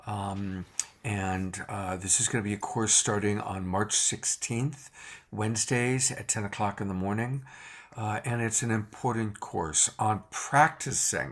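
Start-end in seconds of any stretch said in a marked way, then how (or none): 10.3-11.3 strong stress on the word 'practicing'. Host announcing a course to listeners, with stress on 'practicing'. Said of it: "emphasis on the word practicing".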